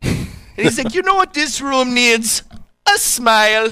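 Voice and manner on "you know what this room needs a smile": put-on Jamaican accent, pitched very high. Retelling a car commercial scene from a meeting: imitating a jamaican accent. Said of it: "the Jamaican accent".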